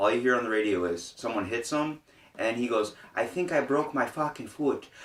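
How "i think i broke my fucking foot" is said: put-on Irish accent, pitched up, blurted. Retelling what a coworker said on the radio: imitating an Irish accent. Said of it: "he's an Irish guy".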